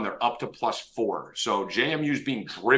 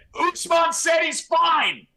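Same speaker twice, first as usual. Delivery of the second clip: mock very high, very slow, drawn-out shout; 3 dB louder than usual. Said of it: "He felt the need to yell it".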